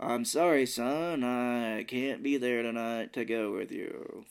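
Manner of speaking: put-on uncaring, indifferent delivery. Retelling a dad's phone line from a game scene: imitating an uncaring voice. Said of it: "sounds like he doesn't care".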